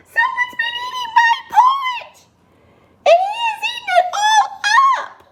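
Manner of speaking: very high, squeaky, tiny voice. Reading the three bears story aloud, the narrator voices Baby Bear's squeaky tiny voice. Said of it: "he squeaked in his little tiny voice".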